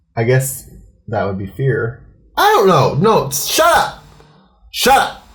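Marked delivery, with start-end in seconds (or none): 2.4-5.1 very high, stretched-out, drawn-out mild yell. Yelling at a co-speaker, then apologizing for it. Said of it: "Sorry for yelling at you".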